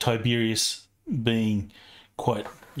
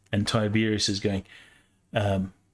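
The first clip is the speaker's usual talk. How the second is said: ordinary talk, nothing marked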